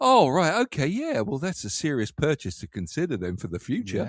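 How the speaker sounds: forced polite, sing-song brightness masking irritation. Acting out hearing a shocking price in a shop: forced polite smile, hiding annoyance. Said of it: "But your face is like".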